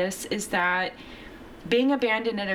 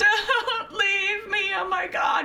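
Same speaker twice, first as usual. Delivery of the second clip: put-on very high, drawn-out, tearful crying plea; 12 semitones higher than usual. Retelling coming in crying when someone asked if they were all right, retelling a crying plea. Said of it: "I just started crying".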